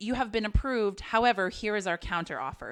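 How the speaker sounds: ordinary delivery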